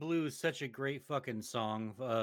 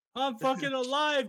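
very high, loud, half laughing, half sobbing; 7 dB louder than usual. Imitating a character escaping in a car, imitating Jesse Pinkman laughing and crying. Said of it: "laughing and crying".

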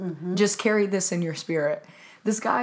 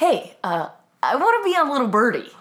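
hesitant start, raised, higher-pitched voice; 5 semitones higher, 5 dB louder than usual. Retelling what a friend asked after a show: imitating Brendan. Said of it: "That's my impression".

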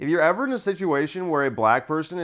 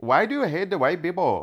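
speaking with an Indian accent; 3 semitones higher than usual. Feeling delirious, the speaker switches to a put-on Indian accent. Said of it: "Now I'm doing Indian".

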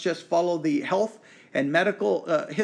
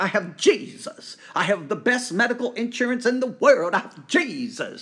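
mocking put-on voice, much higher, slower; 2 semitones higher than usual. Criticizing a teaching that healing is guaranteed, mocking how charismatics say it. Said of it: "I know I am mocking".

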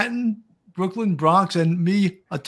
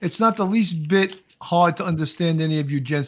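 ordinary talk, nothing marked

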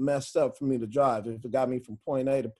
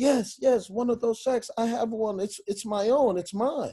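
play-acted, proud, owning-it tone; 9 semitones higher than usual. Retelling a law student's reply about owning a township shack: imitating someone saying it proudly. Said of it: "he said it with such pride".

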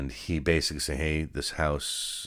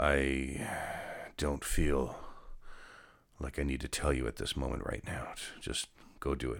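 play-acted, quiet, ominous, foreboding tone; 7 dB quieter than usual. Quoting someone who told him to dress up, imitating an ominous tone. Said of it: "It was just an ominous tone".

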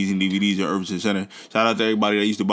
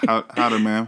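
slight, cowboy-style Texan twang. Discussing whether people in Texas say howdy, speak with a little Texan twang. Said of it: "a little twang".

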